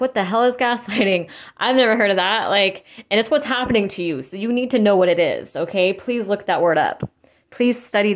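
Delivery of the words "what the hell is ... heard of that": ordinary talk, nothing marked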